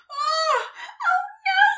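shrill, piercing, very high-pitched, loud squeal. Heading straight for the moon in her toy box, she squeals. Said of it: "she squealed".

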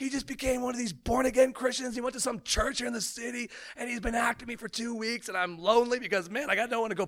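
high, overcome, emotional outpouring, acted out. Retelling what a friend said to him, the speaker imitates him getting emotional. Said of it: "he's getting super emotional".

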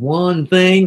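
slight put-on Texas accent. Retelling what an old pastor said in the car: imitating a texas accent. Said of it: "Kinda had a Texas accent".

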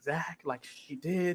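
slow, very hushed, barely audible, drawn-out whisper. Retelling how Jonathan talks about Zach, imitating someone whispering. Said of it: "he, like, whispers".

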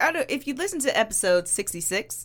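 plain

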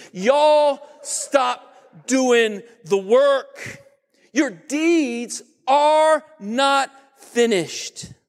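put-on voice with a southern accent. Quoting God's words to the church in Sardis, God in a southern voice. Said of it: "God came with a southern voice".

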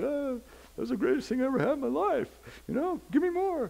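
very high-pitched puppy voice. Retelling how the puppy reacted to eating a spider plant: voicing the puppy. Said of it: "he's all going like".

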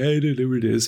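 acted, whiny crying, whined out through sobs. Telling a folktale, voicing a character who can't find the bamboo: acting whiny crying. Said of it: "He's a whanny baby. He's crying".

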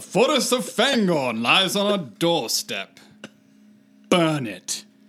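put-on Mid-Atlantic accent. Attempting a quote about Fangorn after giving up once, in a Mid-Atlantic accent. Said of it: "was very Mid-Atlantic".

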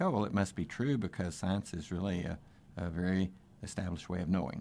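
usual speaking voice

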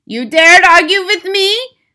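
piercing, very high, very loud shrieking scream. Reading a story, the Grand High Witch turns on a witch who argued, screaming. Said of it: "screamed the Grand High Witch".

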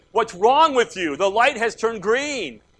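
play-acted, high, furious, out-of-control raging scream. Describing an angry driver honking behind you at a green light: imitating an angry scream. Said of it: "He's screaming".

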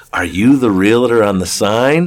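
normal talking voice

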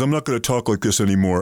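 plain

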